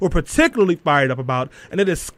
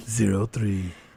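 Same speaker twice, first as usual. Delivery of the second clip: fake creepy voice, lower and quieter; 8 semitones lower, 8 dB quieter than usual. Reading out the show's phone number with co-hosts: put-on creepy voice. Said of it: "Stanley's creepy voice when you say the numbers like that".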